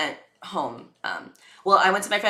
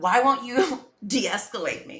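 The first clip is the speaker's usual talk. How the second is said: high-pitched, upset, pleading screaming; 7 semitones higher than usual. Speaker acts out their past self in couples therapy, retelling their own screaming. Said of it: "at first I was screaming".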